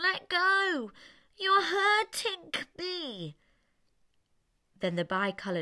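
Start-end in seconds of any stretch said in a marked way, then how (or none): 0.0-3.4 high, slow voice through nose. Reading a story aloud as the elephant's child: speaking through the nose. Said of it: "speaking through his nose, like this".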